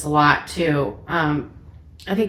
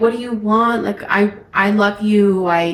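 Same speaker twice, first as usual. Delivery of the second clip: mock tearful pleading voice, higher; 3 semitones higher than usual. Retelling pleading with a partner after pulling over: imitating crying while pleading. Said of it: "I'm crying my eyes out".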